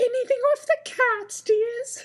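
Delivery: very high falsetto put-on woman voice. Reader redoing a smiling dimpled woman's line at a corridor door, put-on woman voice. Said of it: "That's your go-to woman voice".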